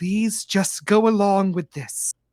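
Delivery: voiced stage whisper, spoken close to the ear. Narrating a game, voicing a drow woman speaking into the player's ear, half-whispering. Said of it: "she whispers in your ear".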